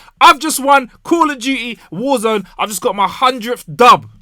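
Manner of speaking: loud, excited yelling. Testing a microphone by talking loudly: loud, elated shouting. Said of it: "overpowering the mic and going crazy".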